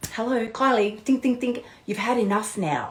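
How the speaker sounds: subtle, very quiet, soft, gentle little voice. Acting out the inner voice that says you've had enough: imitating a gentle, quiet inner voice. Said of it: "a far more gentle, subtle, very quiet voice".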